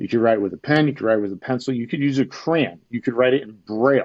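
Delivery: play-acted, lightly sarcastic delivery. Retelling a call with a pharmacist, imitating own sarcastic tone. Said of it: "I started getting a little sarcastic".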